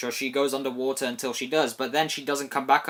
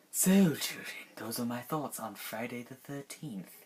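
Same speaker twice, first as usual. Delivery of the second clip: soft, eerie, creepy put-on voice; 8 dB quieter than usual. A movie reviewer signs off to viewers, in a creepy voice. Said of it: "I give up with the creepy voice".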